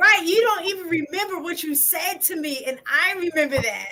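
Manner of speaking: put-on angry outburst. Retelling a past conversation with her, acting out being mad. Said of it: "And then I got mad because I'm like".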